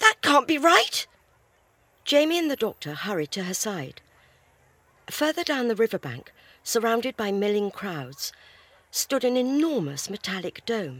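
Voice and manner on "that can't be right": high, raised cry, exclaiming. Narrator reads a traveler pointing something out to companions, crying out. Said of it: "Zoe cried, pointing to her left".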